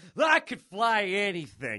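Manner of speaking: high, animated character voice with swinging pitch. Retelling a scene with Rey and Finn, answer Finn in your Poe voice. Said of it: "That's my Poe voice".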